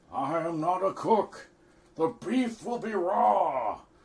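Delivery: very high, loud, squeaky voice, raw drawn out. Misquoting Nixon in a Nixon impression. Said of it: "Nixon misquoted".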